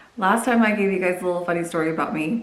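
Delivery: ordinary delivery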